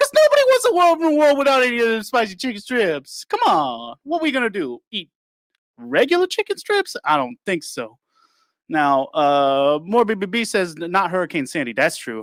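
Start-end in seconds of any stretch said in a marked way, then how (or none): 0.0-8.0 fast, swooping put-on Louisiana Southern accent. Answering a viewer's comment, speaking in a put-on Louisiana accent. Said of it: "this accent is accurate too".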